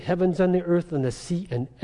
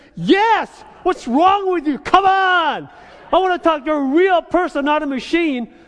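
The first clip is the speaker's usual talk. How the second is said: mock, very high, loud, shrill, fed-up exasperation; 12 semitones higher, 7 dB louder than usual. Retelling answering an automated phone line that keeps misunderstanding, retelling angry exasperation. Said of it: "My blood pressure starts to go up there".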